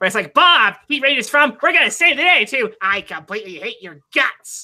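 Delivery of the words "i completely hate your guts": goofy put-on voice, slower. Voice actor shows how Bob differs from Randy, in a goofy Bob voice. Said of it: "me doing a goofy voice".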